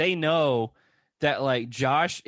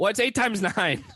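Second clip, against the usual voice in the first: abrupt, high, pitched-up shouted yell; 8 semitones higher than usual. Retelling a housemate's taunt, imitating someone yelling. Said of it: "Devin just starts yelling".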